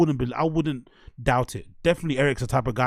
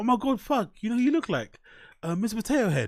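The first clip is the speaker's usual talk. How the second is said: mock funny, overly familiar, quick, pitched-up and jovial; 9 semitones higher than usual. Imagining what the driver said to the comedian, use a mock-jovial, funny tone. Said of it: "like in a funny, f- jovial, trying to, you know, trying to build some sort of familiarity".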